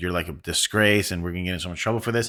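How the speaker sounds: plain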